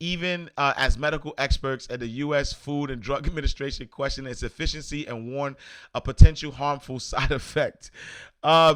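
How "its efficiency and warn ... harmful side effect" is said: words spoken through laughter. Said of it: "I'm laughing".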